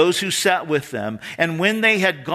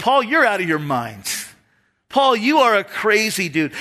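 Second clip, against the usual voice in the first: put-on loud accusing voice, higher; 4 semitones higher than usual. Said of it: "Festus said with a loud voice".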